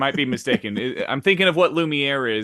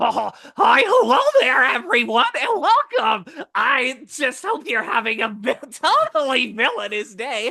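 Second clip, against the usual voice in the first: very high, sweet, squeaky yet menacing cartoon voice; 11 semitones higher, 3 dB louder than usual. Asked to mix Shigaraki with Mickey Mouse, doing a creepy Mickey Mouse voice. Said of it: "that is even more terrifying".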